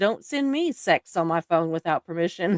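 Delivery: ordinary delivery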